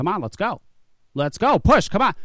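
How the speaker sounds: acted-out loud barking drill-sergeant yell, rising. Retelling a doctor who came into the room, imitating someone yelling. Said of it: "she just starts yelling at her".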